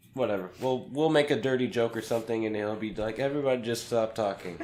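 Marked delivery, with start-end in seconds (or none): none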